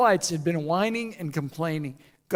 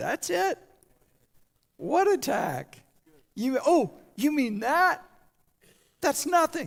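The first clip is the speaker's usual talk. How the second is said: play-acted bored, yawning, unimpressed, pitched-up dismissive tone; 8 semitones higher than usual. Retelling God's answer to the enemy's attack: acting God yawning, unimpressed. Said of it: "God looks at them and yawns and says".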